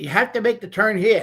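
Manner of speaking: put-on Italian announcer accent with a high lilt. Retelling a video of the Italian GPS giving a direction: imitating an Italian GPS voice. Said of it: "the Italian G P S".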